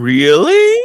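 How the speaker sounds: rising tune, really lifting up at the end. Explaining what an inflection is in conversation, rising inflection on really. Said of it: "It's like the "up" at the end of a sentence".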